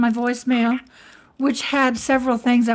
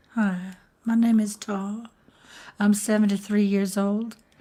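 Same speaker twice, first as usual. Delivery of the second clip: fake polite, proper Southern accent, lower and quieter; 3 semitones lower, 5 dB quieter than usual. Starting a phone call in a made-up role: put-on proper Southern voice.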